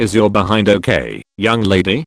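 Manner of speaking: ordinary talk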